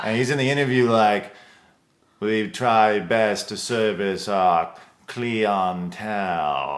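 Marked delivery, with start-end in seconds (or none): 2.2-6.8 slow, drawn-out, posh and refined drawl. Retelling what Halston said in an interview: imitating Halston's posh accent. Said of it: "what the real guy sounded like".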